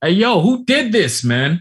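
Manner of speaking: very high, loud, carrying shout. A man shouts to people across the street, shouting across the street. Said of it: "he's like shouting to some people".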